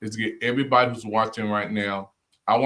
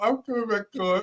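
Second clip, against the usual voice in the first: mock three-year-old girl voice, higher; 11 semitones higher than usual. Imitating the guest's promise to come back on: imitating a little girl's voice. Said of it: "like you was, like, three years old".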